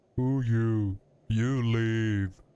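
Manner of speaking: simple-minded, dumb brute voice. Narrating to the listener, the speaker voices Ojo's reply in a dumb brute voice. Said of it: "I should give him more of a dumb brute voice".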